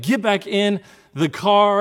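very slow, deliberate, loud, drawn-out yell. Retelling yelling at own kids after a car incident, retelling a yell. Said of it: "I'm yelling at them".

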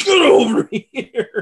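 high, slow, drawn-out yell.

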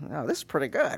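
very high, squeaky nerd voice. Retelling how he reacted to hearing the buddy's podcast on a ride; imitating a nerdy voice. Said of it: "He got his real nerdy voice".

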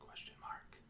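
soft, barely audible whisper. Joking about website punctuation with another speaker: whispering. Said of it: "I don't know why I whispered that".

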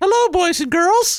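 very high-pitched puppet-style voice. Performing a puppet's voice after being asked for a taste: Mister Peepers puppet voice. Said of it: "can we get a taste of the Mister Peepers?".

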